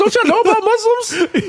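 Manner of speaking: very high put-on disbelief, laughing. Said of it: "I was like".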